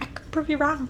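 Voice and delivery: whispering. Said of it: "'Cause you're whispering".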